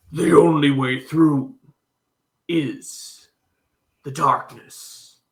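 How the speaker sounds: low, deep robotic monster voice, mechanical screech. Voicing a manticore hatchling screeching up at a character: deep mechanical voice. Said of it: "screeches up at Bayou in a deep mechanical voice".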